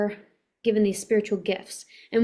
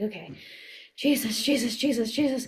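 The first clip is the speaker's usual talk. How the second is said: hushed, repeated mutter under the breath; 3 dB quieter than usual. Retelling praying in a store aisle during a panic attack: imitating muttering under breath. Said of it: "over and over again, under my breath".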